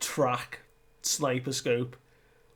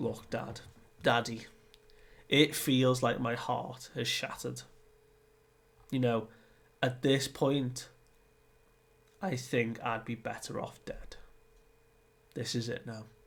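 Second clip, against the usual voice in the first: plain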